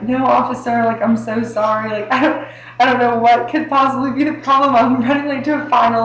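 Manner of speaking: put-on tearful, high-pitched begging voice. Retelling being pulled over by an officer, answering him while retelling own crying. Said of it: "like I was crying".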